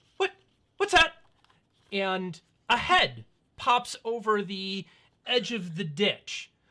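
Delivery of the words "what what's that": put-on small elven boy voice, higher and louder. Voicing a small elven boy who spots the party in a ditch: small elven boy voice. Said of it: "you hear a voice kinda peek up going".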